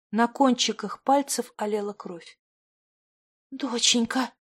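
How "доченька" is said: whispered, quieter. A woman staring at blood on her fingertips calls to her daughter, whispered. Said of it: "прошептала она".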